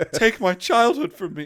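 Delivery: put-on very high childish outburst. Mocking the child activist being discussed: impression of the child activist. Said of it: "That was my impression".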